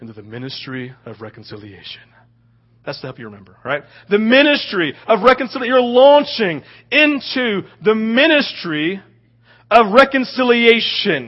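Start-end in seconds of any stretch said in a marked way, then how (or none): 0.0-2.0 dropped very low and very soft, deep. Giving listeners a phrase for the morning to remember, the speaker uses a deep voice. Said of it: "I'm going to use a deep voice".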